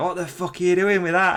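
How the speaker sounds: mock, high-pitched, jeering shout. Retelling a viral clip where lads in a van shout at an emu walker, imitating a shout. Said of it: "they shout they shout something".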